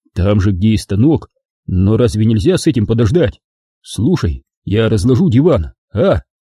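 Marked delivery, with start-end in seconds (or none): none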